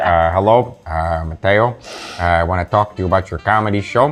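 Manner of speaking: put-on South Side Chicago accent. Show how your uncle talked to Mateo about his comedy show, in Uncle Mike's South Side Chicago accent. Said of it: "had the South Side Chicago accent, so he literally talked like this".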